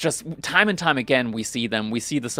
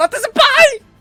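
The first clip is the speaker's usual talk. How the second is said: put-on terrified scream, higher and louder; 11 dB louder than usual. Retelling a nightmare of waking up in sweat: mock screaming in terror. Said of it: "screaming at the top of my lungs".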